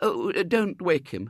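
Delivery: drawn-out, slow, high begging plea. Mrs. Brown begs the family not to wake the sleeping William, pleading. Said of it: "pleaded Mrs. Brown".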